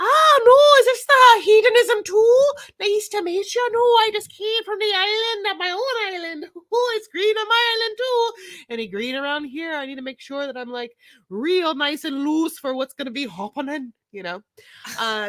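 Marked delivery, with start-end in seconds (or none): 0.0-13.9 fake Irish accent, very high-pitched. Acting out an anonymous persona at a swingers club: put-on Irish accent. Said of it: "that's my Irish swinger".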